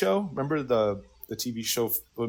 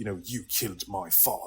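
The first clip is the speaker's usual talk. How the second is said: low, hushed, put-on old-epic-film British accent; 4 semitones lower, 8 dB quieter than usual. Illustrating how characters speak in movies set in ancient Greece, in a British accent. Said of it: "in a British accent".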